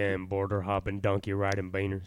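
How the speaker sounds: put-on country accent. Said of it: "Try and do a country accent".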